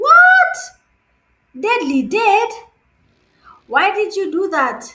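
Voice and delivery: high, loud, shocked outcry.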